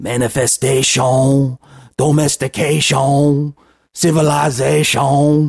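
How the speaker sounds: put-on high Cajun accent on the -tion endings. Describing how an accent sounds, a speaker demonstrates it with a Cajun Man impression. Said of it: "like Cajun Man would say it like".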